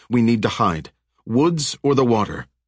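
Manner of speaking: usual speaking voice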